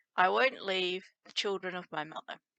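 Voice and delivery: ordinary talk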